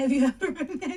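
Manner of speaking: high, loud voice crack. Confiding in listeners, the speaker asks them a question, voice cracking. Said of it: "It was a voice crack".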